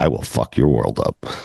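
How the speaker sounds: barely audible. Speaker quoting a man's threat, then explaining how it must be said: barely audible quoted threat. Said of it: "You have to say it like that... like you can barely hear him".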